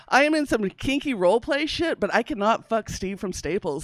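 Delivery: ordinary delivery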